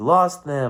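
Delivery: mock angry, mad-sounding voice. Retelling a dream where the dad snapped at the speaker: imitating an angry dad. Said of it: "all mad and".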